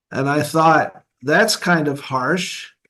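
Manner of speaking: plain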